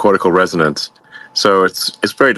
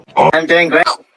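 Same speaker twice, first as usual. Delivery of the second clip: helium-sounding voice, higher; 8 semitones higher than usual. Answering a greeting while playing the fool: helium voice. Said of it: "do I sound like I've got he-, helium voice".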